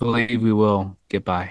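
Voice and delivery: gloomy, sad, deflated, unconvincing tone. Talking with the others while Troy is away, sounding sad. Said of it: "That sounded uh, so sad".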